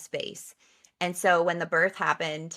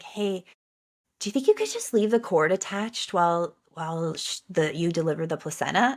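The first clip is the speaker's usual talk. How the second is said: imitated whisper. Retelling own words to the doctor after a birth: retelling a whisper. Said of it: "I just whispered to her".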